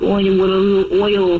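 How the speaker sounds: put-on full-on cooing baby-talk voice. Imagining being offered a little oil at an oil change, mock baby talk. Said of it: "full on baby talk performance".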